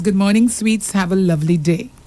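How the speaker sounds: ordinary delivery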